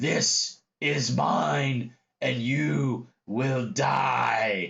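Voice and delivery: very slow deep croak, "die" stretched out. Running a tabletop game, the narrator voices a one-handed foe addressing the players in a deep, croaky voice. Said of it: "he says in this deep, croaky voice".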